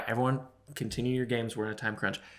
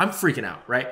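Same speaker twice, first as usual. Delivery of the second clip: plain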